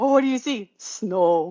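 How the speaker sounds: put-on Canadian accent. Quoting one of two arguing show characters: imitating a Canadian accent. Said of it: "pull the Canadian accent".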